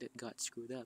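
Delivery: ordinary delivery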